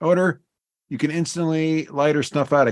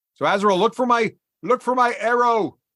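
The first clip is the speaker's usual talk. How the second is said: high, raised, shouted yell; 6 semitones higher than usual. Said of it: ""Why are you yelling?"".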